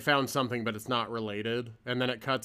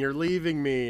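put-on scream, higher and louder; 3 semitones higher, 5 dB louder than usual. Retelling a scene where she beats him with wood: imitating a scream.

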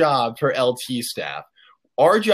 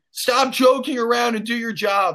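put-on scream, pitched much higher; 8 semitones higher than usual. Retelling how Owen turned and screamed at the speaker, imitating Owen screaming. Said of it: "Owen screams at me like".

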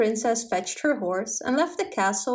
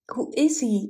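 plain

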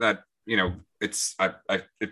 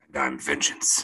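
gruff, brooding vigilante hero voice; 5 semitones lower, 4 dB quieter than usual. Podcast co-host introducing themselves on the show as Vengeance: Batman voice. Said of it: "That was a good voice".

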